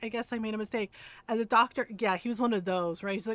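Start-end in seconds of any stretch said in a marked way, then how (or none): 0.0-0.9 mock nurse voice, near tears, crying. Retelling a doctor yelling at a nurse in training, as the nurse: imitating a nurse near tears. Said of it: "she was like starting to cry".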